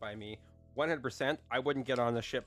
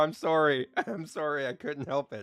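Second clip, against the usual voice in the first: plain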